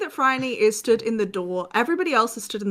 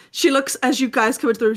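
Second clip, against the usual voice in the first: ordinary talk, nothing marked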